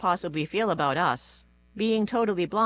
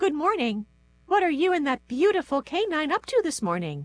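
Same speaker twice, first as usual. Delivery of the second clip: piping, very high-pitched voice; 9 semitones higher than usual. Reading a story, a voice behind Jane greets her: high-pitched, fairly soft voice. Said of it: "a high-pitched, fairly soft voice".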